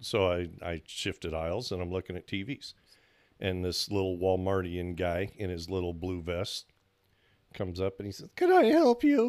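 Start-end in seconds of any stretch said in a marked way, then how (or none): 8.4-9.3 put-on very high, loud, voice-cracking pubescent teen voice. Retelling a Walmart worker offering help: imitating a pubescent teen voice. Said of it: "Was he like a teen, like going through puberty".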